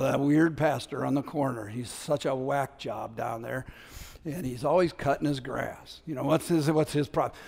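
very hushed, barely audible, gossipy half-whisper. The speaker imagines neighbors walking past his front porch: imitating neighbors half-whispering. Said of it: "they whisper about us".

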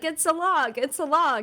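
high-pitched, loud shouting. Imagining the boys calling to a passing Navy guy, retelling a shout. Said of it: "they were shouting".

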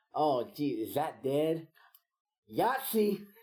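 put-on sloppy, drawn-out, high-pitched drunken holler. Retelling how a drunk visitor who didn't know the game yelled: imitating A B K's drunken yell. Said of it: "he yelled".

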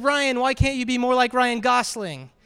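ordinary delivery

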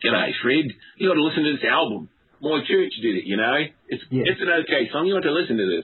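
put-on Australian accent. Retelling what someone said to Fred, in an Aussie accent. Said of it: "I'm going to try to do an Aussie accent".

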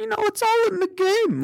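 very high put-on voice. Speaker imitates a football player's line, imitating a high-pitched voice. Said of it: "his voice goes really high".

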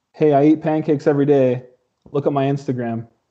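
usual speaking voice

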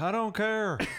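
very high-pitched attempted Southern accent. Explaining a punchline by quoting him: Tommy Lee Jones voice. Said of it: "Tommy Jones is like".

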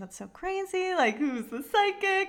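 very high, giggly, laughing through words, acted out. Retelling what a woman said about the speaker's psychic; retelling someone laughing. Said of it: "she started like laughing with me".

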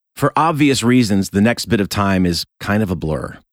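ordinary delivery

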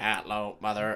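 put-on robotic child voice. Retelling a movie scene: imitating a robot boy. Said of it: "the little robot boy's".

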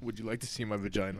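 very deep, very low, very quiet, hushed rumble. Retelling what a girl from seventh grade said: imitating a girl's deep voice. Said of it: "Just a deep-ass voice and everything".

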